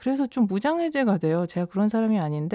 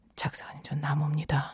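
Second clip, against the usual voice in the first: whispered, much quieter, secretive hush; 4 semitones lower, 7 dB quieter than usual. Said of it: "이렇게 귓속말로".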